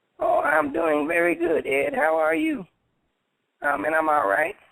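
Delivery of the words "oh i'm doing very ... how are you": rough, creaky voice, rasped out. Pretending to call in to the show as Carlos Pena. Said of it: "Carlos Pena might be on the line".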